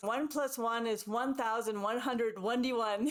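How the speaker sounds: ordinary delivery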